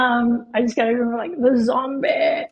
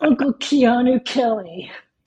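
put-on laid-back stoner surfer voice. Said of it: "That was a pretty good Keanu impression".

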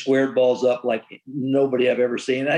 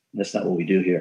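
put-on calm voice, much lower; 6 semitones lower than usual. Retelling how a respected clubhouse leader spoke to a guy, in a very low, calm voice. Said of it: "in a very low, calm voice".

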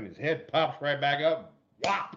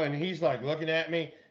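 ordinary talk

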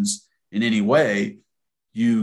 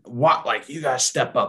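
restrained screaming-fit delivery, mild yelling tone; 3 semitones higher than usual. Describing a man screaming his head off at the offense, imitating someone screaming. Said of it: "he's just screaming his head off".

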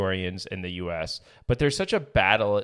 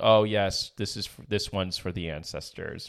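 ordinary talk, nothing marked

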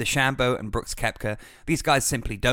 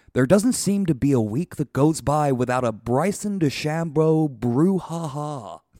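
put-on golf TV announcer voice, higher and louder; 3 semitones higher, 4 dB louder than usual. Retelling a remark that made you laugh out loud, in Rich Lerner's Golf Channel voice. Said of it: "in his kind of perfect Golf Channel voice".

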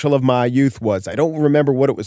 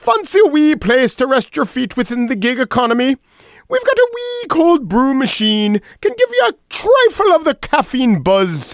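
put-on Irish accent, pitched way up; 12 semitones higher than usual. Playing a scene on the show, getting into an Irish accent. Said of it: "I want to get into the Irish accent".

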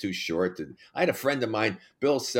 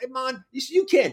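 imitated Hawaiian accent, much higher pitch; 5 dB louder than usual. Retelling what the laughing guys told him after he fell, Hawaiian accent. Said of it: "they talk in Hawaiian accent".

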